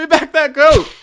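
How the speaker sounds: boisterous, playful, very loud, very high-pitched shout. Voicing a yell heard from ahead in the forest: loud boisterous playful voice. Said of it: "it's a loud, boisterous, playful voice".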